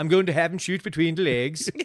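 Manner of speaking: mock, fake Dutch accent. Giving a character orders in a game, mock dutch accent. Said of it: "The Dutch people sound like this".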